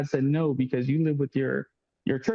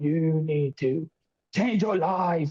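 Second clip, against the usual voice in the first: British accent, slow and put-on; 3 semitones higher than usual. Retelling how the prophetess spoke while convulsing: imitating a british accent. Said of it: "start talking in this British accent".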